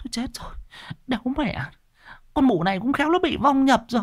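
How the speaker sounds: quavering, trembling, very high, rushed voice. Neighbour women watch a shrieking woman being held down, trembling. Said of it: "Mấy bà hàng xóm run run".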